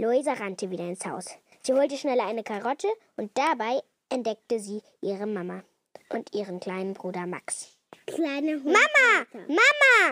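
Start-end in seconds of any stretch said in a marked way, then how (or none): 8.1-10.1 bursting, impetuous stormy call, high and loud. A girl runs into the house and finds her mom, calling out impetuously. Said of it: "rief Luisa stürmisch".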